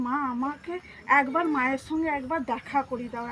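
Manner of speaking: plain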